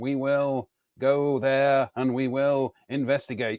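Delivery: slow, measured, stately cadence, words drawn out. Showing how the actor talks, with that certain cadence: Paul Darrow impression. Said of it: "speaking like this".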